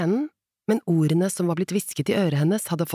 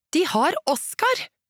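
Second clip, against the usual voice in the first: raised voice, pitched very high; 11 semitones higher than usual. Lotta repeats herself to someone who isn't listening, with a raised voice. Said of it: "Lotta hevet stemmen".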